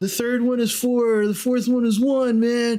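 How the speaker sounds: put-on stoned-sounding voice. Voicing a character who is tripping on drugs: stoned. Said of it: "Jeff is tripping balls".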